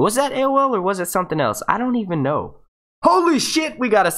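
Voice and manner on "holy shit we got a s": sudden scream, yelling, higher. Reacting on stream as a super chat comes in: sudden scream. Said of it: "I didn't mean to scream".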